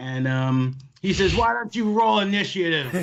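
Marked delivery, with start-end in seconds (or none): 1.3-2.9 loud, high yelled delivery. Recounting what he said as the scene escalates to shouting, retelling a yell. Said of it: "He yells that".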